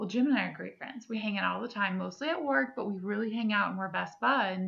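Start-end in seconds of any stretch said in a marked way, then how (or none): none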